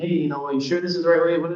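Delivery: put-on fast, upset, anxious, panicked fretting. Retelling questioning her about the route while lost on the way, retelling own panicked complaint. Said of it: "I'm kind of panicking, getting upset".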